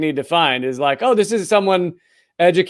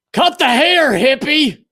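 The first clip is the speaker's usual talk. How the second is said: high, barking drill sergeant yell; 8 semitones higher than usual. Joking the show looks like a Marine sergeant and the man he yells at; yelling drill sergeant. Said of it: "looking like the Marine Sergeant and the guy he was yelling at".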